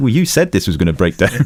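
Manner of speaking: ordinary talk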